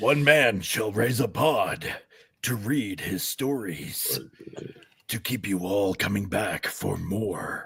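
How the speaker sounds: movie trailer announcer voice. Pitching a show with the other hosts: movie trailer announcer voice. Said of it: "Decent, decent movie trailer announcer".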